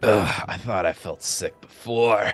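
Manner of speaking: offhand side remark, half to himself. Voicing Chucky, who feels sick, muttering under his breath. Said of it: "you can hear Chucky kind of under his breath".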